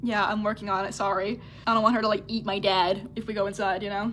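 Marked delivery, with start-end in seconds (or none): none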